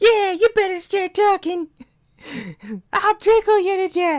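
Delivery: very high, loud, squeaky cute voice. Retelling how Paimon joins the threats: cute little Paimon voice. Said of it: "Paimon chimes in with her cute little voice".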